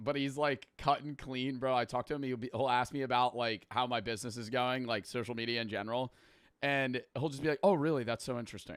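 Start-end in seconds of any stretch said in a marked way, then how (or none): 7.6-8.8 mock feigned interest, put-on and fake. Imitating the finance guy he talks to about his business: mock feigned interest. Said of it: "there's no way you're actually caring about this".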